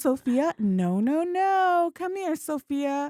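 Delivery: very slow, soothing, gentle, high-pitched coaxing tone. Retelling how a woman called the cat after cutting its whiskers: imitating a super gentle tone. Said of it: "super gentle".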